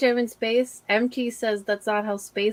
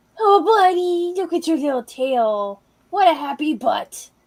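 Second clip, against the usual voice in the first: put-on high, slow, most ridiculous baby talk; 6 semitones higher, 3 dB louder than usual. Talking to a dog the way animals understand, in the most ridiculous voice possible. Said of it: "talk like in the most ridiculous voice possible".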